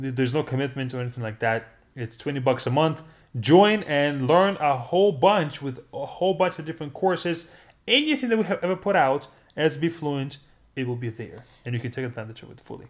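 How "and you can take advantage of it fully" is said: very fast, very quiet, rushed delivery. Speaker pitching a monthly course subscription to listeners, said very quickly. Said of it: "you said that so quick".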